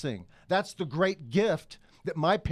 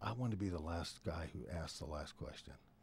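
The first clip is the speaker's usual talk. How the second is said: hushed, very soft, barely audible half-whisper; 12 semitones lower, 16 dB quieter than usual. Retelling what was said to the host before the questions: imitating a half-whisper. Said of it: "I whispered to her".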